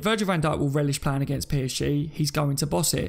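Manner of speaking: normal talking voice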